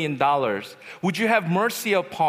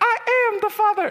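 very high, squeaky voice; 4 dB louder than usual. Retelling answering a debt collector's call as a young kid: Mickey Mouse-like child voice. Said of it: "I sounded like Mickey Mouse".

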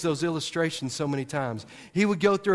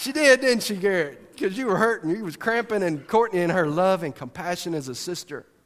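plain

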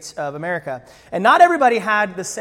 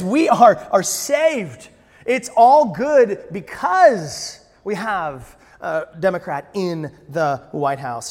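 usual speaking voice

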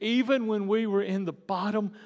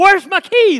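high, loud, shrieking scream; 11 semitones higher, 16 dB louder than usual. Retelling running back into the house for lost keys: imitating own past screaming. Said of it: "I'm screaming".

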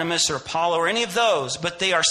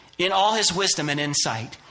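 usual speaking voice

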